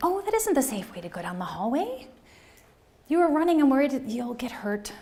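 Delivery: sing-song elementary school teacher voice. Demonstrating how to redirect a child running in a hallway: elementary school teacher voice. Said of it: "This is my elementary school teacher voice".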